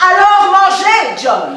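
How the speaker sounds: loud, slow, insistent and forceful delivery.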